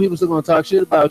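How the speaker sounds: plain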